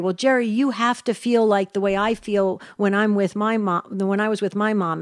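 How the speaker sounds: ordinary talk, nothing marked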